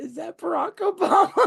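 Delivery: put-on very high, shrill, rough blurted yell of a six-year-old. A dad retells what his six-year-old son yelled out: imitating son yelling out. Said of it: "my son just yells out".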